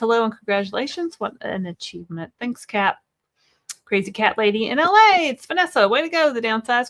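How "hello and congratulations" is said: usual speaking voice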